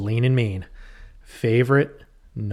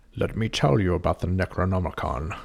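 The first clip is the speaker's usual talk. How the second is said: grave, deep, low wise-man voice; 4 semitones lower than usual. Imagining an actor cast as the wise man: Sean Connery impression. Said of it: "You could hear him saying it".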